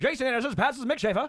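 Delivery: put-on high old-timey announcer voice. Joking about calling a horse race: old-time announcer voice, high-pitched. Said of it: "do an old-time voice and just start saying random things in a high, high-pitched".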